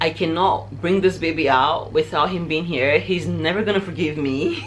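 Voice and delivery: ordinary talk, nothing marked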